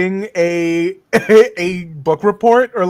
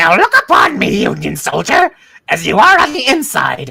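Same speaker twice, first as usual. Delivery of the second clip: birdlike character voice. Playing a bird addressing a Union soldier: bird voice. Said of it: "I'll do a bird voice".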